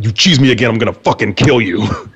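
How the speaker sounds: mock-furious tone. Speaker retelling a threat to a ten-year-old boy: retelling an angry threat. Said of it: "how really mad I was about that".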